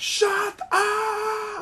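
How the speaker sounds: shrill, very high, drawn-out yell. Showing another speaker how the line should go: yelling into the mic. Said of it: "And just yelled into the mic".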